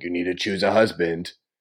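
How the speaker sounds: deep, firm, bossy king voice. Telling the other speaker they act like a king, imitating a king. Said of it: "you're like the king who's like".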